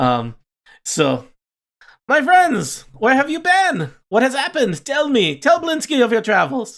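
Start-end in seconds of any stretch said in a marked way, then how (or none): 2.1-6.8 very high pitched, breathless, out-of-breath voice. Narrating a scene, the character greets friends after closing many locks, winded Blinsky voice. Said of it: "he seems a little out of breath".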